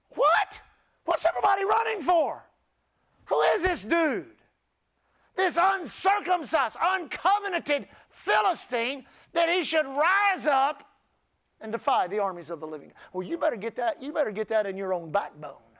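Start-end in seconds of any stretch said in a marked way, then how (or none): 0.2-10.9 mock fired-up, stirred, impassioned emotional outcry. Acting out what he said about the Philistine; retelling an emotional outburst. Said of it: "He did not whisper that".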